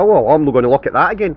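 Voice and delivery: plain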